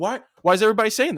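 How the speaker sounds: put-on high, repeated yelling. Retelling what Lisa Tatum yelled in the pouring rain, imitating Lisa Tatum yelling. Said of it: "she's yelling at me".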